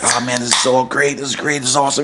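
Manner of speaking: usual speaking voice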